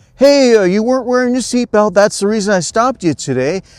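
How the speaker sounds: very high, almost silly, joyful cheerful voice. Retelling what he said to a driver he stopped, put-on silly, joyful voice. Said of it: "this almost silly, joyful voice".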